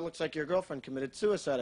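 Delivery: ordinary talk, nothing marked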